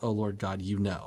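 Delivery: ordinary talk, nothing marked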